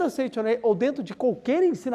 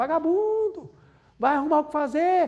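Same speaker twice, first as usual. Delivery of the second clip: put-on scolding father's yell, pitched high; 5 semitones higher than usual. Describing leaving home while a father shouts: imitating a father yelling. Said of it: "tá seu pai gritando".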